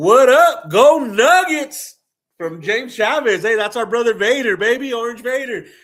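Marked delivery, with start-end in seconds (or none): 0.0-2.0 very slow, loud, pitched-up, heartfelt voice. Reading a viewer's message aloud when asked: with some feeling. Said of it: "please say this with some feeling".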